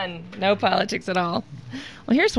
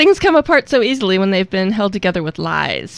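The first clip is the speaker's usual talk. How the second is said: usual speaking voice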